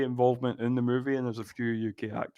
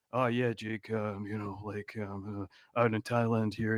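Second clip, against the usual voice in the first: very soft, low, hushed fake American accent; 4 semitones lower, 9 dB quieter than usual. Speaker describing a man's voice on a recording, imitating a fake american accent. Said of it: "just doing his American accent".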